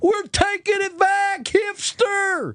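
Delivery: very high-pitched mock yell.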